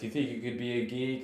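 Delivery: put-on laughing voice. Speaker retells what a man asked while laughing: imitating someone laughing while asking. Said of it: "he's laughing and he's like".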